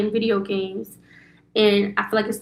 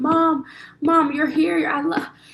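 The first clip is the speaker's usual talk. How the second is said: put-on crying child voice, higher; 7 semitones higher than usual. Retelling her son waking from a bad dream: imitating her son crying. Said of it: "He just crying drastically".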